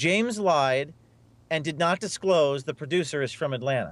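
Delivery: plain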